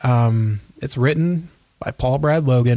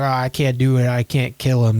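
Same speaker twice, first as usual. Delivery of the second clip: mock tearful crying out. Retelling the daughter's moment in a movie: imitating someone crying out. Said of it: "she's, like, crying out and she's like".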